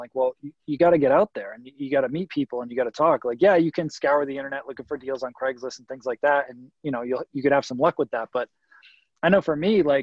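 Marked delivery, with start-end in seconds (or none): none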